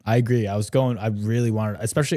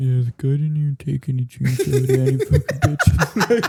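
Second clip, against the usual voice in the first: put-on sulky, pouting grumbling; 3 semitones higher, 4 dB louder than usual. Imitating the other speaker's complaint about the movie, mock pouting. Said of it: "You're so mad about it".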